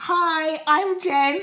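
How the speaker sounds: changed on-camera voice. Imagining walking into Love Island, introduce yourself in a changed on-camera voice. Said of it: "Why did your voice change?".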